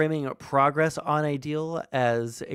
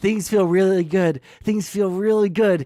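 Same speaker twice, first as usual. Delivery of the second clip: put-on gritted-teeth delivery, higher and louder; 5 semitones higher, 7 dB louder than usual. Repeating the president's words: imitating speaking through gritted teeth. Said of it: "he says through gritted teeth".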